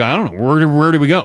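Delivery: normal talking voice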